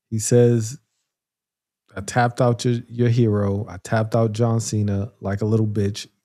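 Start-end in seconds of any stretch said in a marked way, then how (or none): none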